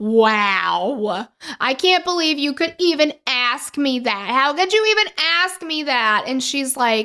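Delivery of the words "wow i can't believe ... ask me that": outraged, wounded, offended indignation with swooping pitch. Retelling how a woman reacted when asked about a killing: imitating someone screaming offended. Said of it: "screaming and losing her mind about how offended she is".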